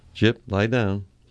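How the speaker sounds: ordinary delivery, nothing marked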